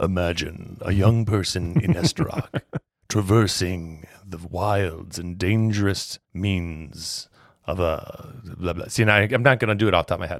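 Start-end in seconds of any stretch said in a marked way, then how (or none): 0.0-8.7 dramatic, cinematic movie-trailer narration voice, lower pitch. Pitching a role-play idea in a voice announced beforehand: cinematic movie-trailer voice. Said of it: "cinematic talking with lots of cool name heres".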